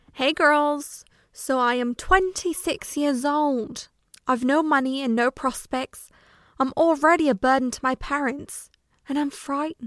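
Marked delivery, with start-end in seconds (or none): 1.3-9.9 put-on English accent needing work. A podcast host opening her episode with a quoted line, put-on accent needing work. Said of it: "That accent could use a little work".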